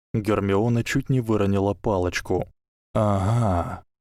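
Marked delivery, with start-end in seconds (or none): 2.9-3.7 whispering with satisfaction. A voice addresses the one who nearly dropped her wand: satisfied whisper. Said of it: "удовлетворенно прошептал голос".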